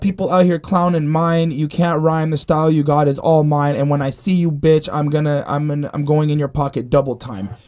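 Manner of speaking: usual speaking voice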